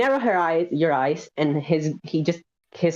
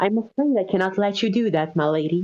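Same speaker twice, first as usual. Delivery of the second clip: corniest, cheesiest put-on voice; 2 semitones higher than usual. Playing a character stepping into someone's way: most corny voice. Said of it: "with his mo-, most corny voice".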